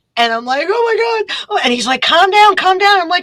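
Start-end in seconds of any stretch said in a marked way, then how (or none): 0.7-1.6 put-on hysterical sobbing, pitched way up high. Retelling being pulled over by a state trooper, imitating hysterical crying. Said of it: "I'm hysterical crying".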